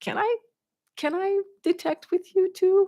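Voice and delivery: meek, timid voice.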